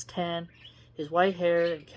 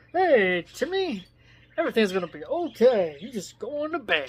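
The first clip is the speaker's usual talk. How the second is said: condescending, pretentious, swooping newscaster tone; 4 semitones higher, 4 dB louder than usual. Imitating an old-fashioned newscaster reassuring a child, mock-patronizing newscaster tone. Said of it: "it's a bit condescending, pretentious, uh, patronizing tone".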